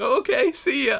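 high mock voice.

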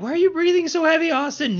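very high, mocking put-on mother voice.

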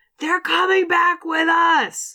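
yelling.

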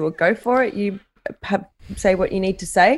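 plain

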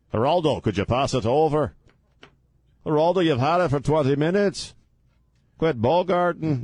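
put-on clumsy Liverpool accent, pitched high. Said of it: "That's the worst Liverpool accent I've ever done".

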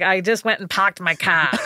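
put-on Boston accent. Telling a story about a man, quoting him in a Boston accent. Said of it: "Boston accent. So he's like".

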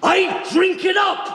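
enraged screaming. Acting a scene from a film: world-class yelling. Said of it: "That's some world-class yelling right there".

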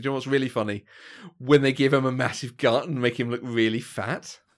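ironic, sarcastic tone. Mocking a movie's fat-suit gag after announcing it: sarcastic. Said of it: "I'm pointing out this is gonna be sarcastic".

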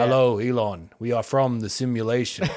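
flat, toneless voice. Joking about visitors from the simulation greeting elon, in a monotone voice. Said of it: "talk in like kind of a monotone voice".

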